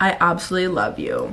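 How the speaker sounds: usual speaking voice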